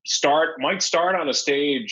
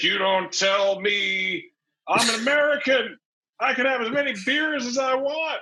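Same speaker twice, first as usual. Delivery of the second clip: play-acted sloppy, slurring, pitched-up drunk voice; 8 semitones higher than usual. Retelling a bar customer the bartender refused, imitating his drunk slur. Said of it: "slurring his words".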